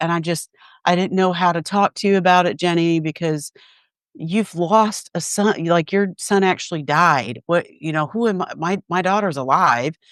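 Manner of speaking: put-on weeping, speaking through tears. Retelling what a friend said while crying: imitating a friend crying. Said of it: "when she was crying, she was like".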